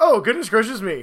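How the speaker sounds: put-on fussy, droid-like robot character voice. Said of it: "Three P O would be like".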